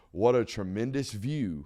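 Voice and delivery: mock sarcastic tone. Predicting what colleagues will tweet about the new press box: imitating a sarcastic tweet.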